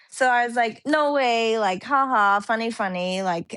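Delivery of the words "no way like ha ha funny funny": put-on, joking, dismissive, not serious. Retelling a phone call they thought was a prank: imitating own joking, not-serious reply. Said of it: "I was kinda like that on the phone".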